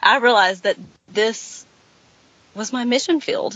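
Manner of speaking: voice on the verge of crying, choking up. Speaker recounting a personal realization, about to cry. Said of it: "I'm going to cry".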